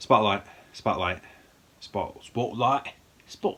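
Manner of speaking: attempted Boston accent, repeated several tries. Going through a list of films, trying out a Boston accent. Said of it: "I'm trying to do a Boston Boston accent".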